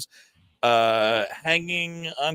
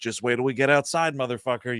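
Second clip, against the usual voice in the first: put-on hushed menacing tone, lower; 4 semitones lower than usual. Retelling how teenagers in a dark theater threatened them: imitating a quiet threat. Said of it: "threatening us quietly the whole movie".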